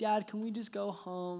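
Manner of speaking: weepy, tearful, sobbing. A father retells his daughter's plea after she loses; imitating her crying. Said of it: "She's crying".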